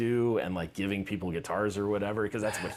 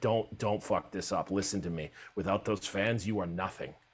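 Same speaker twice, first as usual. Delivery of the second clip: put-on serious tone, quieter; 3 dB quieter than usual. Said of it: "And he got all serious".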